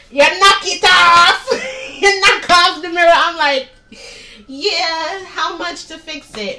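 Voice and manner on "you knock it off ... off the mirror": put-on loud old man voice, West Indian accent. Retelling the man at the auto place scolding her over the mirror, old west indian man voice. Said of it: "old West Indian man".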